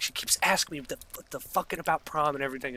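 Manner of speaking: mock pissed-off tone. Retelling complaining to parents at home: imitating own pissed-off complaint. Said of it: "And I'm all pissed off".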